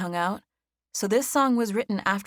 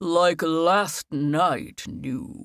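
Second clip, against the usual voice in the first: theatrical, dramatic, deep announcer-style voice; 3 semitones lower than usual. A piano player talks into the mic to the audience in a dramatic, deep voice. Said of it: "talked in a dramatic, deep voice".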